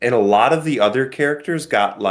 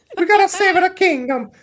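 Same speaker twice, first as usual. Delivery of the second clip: put-on cartoon Italian accent, higher. Mocking an actor's accent in the movie: imitating Chris Hemsworth's Mario-like accent. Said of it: "like, a Mario".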